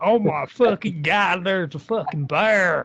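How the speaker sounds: put-on American accent. Speaker shows how an American would react to the bear, imitating an American. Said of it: "if you want to hear the voice right".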